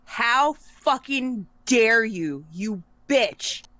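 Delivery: slow, livid, outraged, furious voice. Voicing a furious character who blasts a goddess's temple wall: pissed off shouting. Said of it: "Alikara gets pissed as shit".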